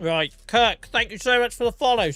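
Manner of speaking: words pushed past full mouth. A streamer talking to viewers while eating, with mouth full. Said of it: "I got a mouthful of Jaffa cake".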